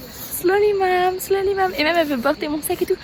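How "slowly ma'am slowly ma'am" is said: very slow, pitched-up, acted-out teasing. Retelling how the guide teased during the hike: imitating the guide's teasing. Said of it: "la guide elle se fout un peu de ma gueule".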